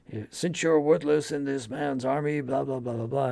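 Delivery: put-on high-pitched, berating, scolding tone in a Southern accent. Retelling a commandant berating the party: imitating Colin's Southern accent. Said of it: "Colin does this great Southern accent".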